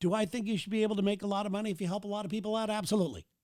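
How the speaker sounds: hurried, rushed, rattled-off, skip-past-it delivery. Talking to viewers about the self-help industry, saying it really fast. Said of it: "I said that really fast".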